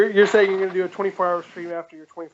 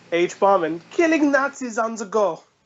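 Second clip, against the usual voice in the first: clumsy, really bad fake German accent; 4 semitones higher than usual. Podcast host reading the episode intro, in a really bad German accent. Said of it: "that was such a bad accent".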